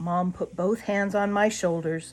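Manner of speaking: ordinary delivery, nothing marked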